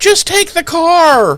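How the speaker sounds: play-acted very high shriek, "car" long stretched. Retelling a man fleeing from a group at night: imitating screaming like a girl. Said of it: "screaming like a girl and being like".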